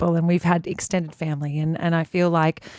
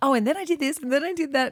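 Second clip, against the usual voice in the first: mock-nervous rambling chatter, much higher pitch; 8 semitones higher than usual. Recalling early interviews, imitating own nervous chatter. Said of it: "when I'd get nervous, I'd start talking".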